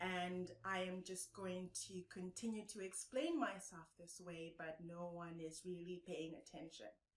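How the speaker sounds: very low, flat, lifeless robot drone. Explaining engaging speech, the speaker demonstrates its opposite: monotone robot-like voice. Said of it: "where you sound like a robot".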